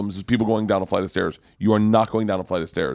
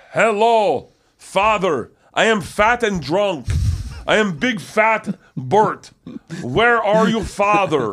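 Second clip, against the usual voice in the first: halting, very high, slow broken English; 11 semitones higher than usual. Retelling how a stuntman acted out the scene: imitating Kazumi's broken English. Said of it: "his English wasn't great".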